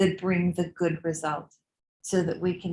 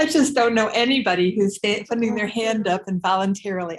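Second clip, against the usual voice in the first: loud, laughing through the words, cracking up; 3 semitones higher, 5 dB louder than usual. Telling another speaker about the wording of an obituary, laughing while talking. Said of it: "I'm sorry. I've just cracked up".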